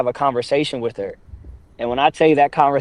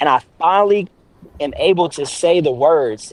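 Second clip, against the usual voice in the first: ordinary delivery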